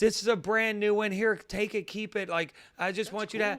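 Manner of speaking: put-on thick Maryland accent. Quoting a woman who came around the corner to you, in the thickest Maryland accent. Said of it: "The thickest Maryland accent you could imagine".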